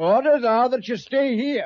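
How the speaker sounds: loud, barked shouting. Ordering one of the group to stay behind while others go: shouting. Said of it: "There's no need to shout at me".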